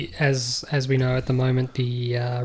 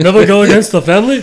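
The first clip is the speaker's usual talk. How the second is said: put-on Austrian accent, higher and louder; 7 semitones higher, 9 dB louder than usual. Doing the Godfather line as Niki Lauda. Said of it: "That'd be Niki Lauda".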